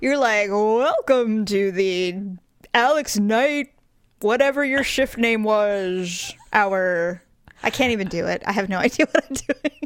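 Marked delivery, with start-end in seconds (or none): 0.5-7.2 slow, drawn-out radio announcer voice. Mocking the other speaker's show intro, in a radio announcer voice. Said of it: "you totally have this radio voice".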